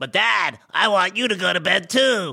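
put-on voice of a young girl. Parent retelling what the daughter Emmy says at bedtime, imitating Emmy. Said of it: "She's like".

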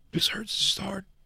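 high, breathy, mock sobbing whisper.

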